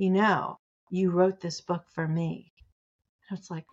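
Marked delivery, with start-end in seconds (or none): 0.0-2.5 hushed whisper. Retelling what readers said in calls about the book: imitating a reader whispering. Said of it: "most of the time in a whisper".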